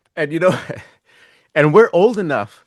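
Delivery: words broken up by laughter. Trying to go on after the guest's Bitcoin joke: laughing while talking. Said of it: "Sorry, I'm still la-".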